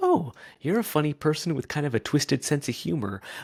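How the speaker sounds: high, surprised, amused aside. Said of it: "But then you kinda go".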